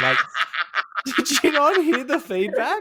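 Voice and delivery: shrill, very high-pitched yelling scream. Recapping a show, retelling what they screamed at the screen: screaming at the screen. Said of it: "I'm like screaming at the screen".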